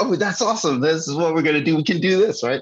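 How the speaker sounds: gushing, overly eager cheer. After promising to sound more excited next time, speaker replies more excited. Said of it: "Next time I'm gonna be all more excited".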